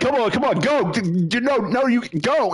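put-on yelling. Retelling how a teammate yelled directions during the game: imitating someone yelling. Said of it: "But you just yelling".

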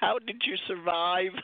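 ordinary talk

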